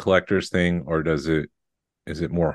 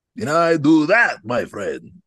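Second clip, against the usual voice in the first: put-on pirate voice, higher; 8 semitones higher than usual. Joking about the actor's pirate role, with a Hondo Ohnaka impression. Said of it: "doing the impressions".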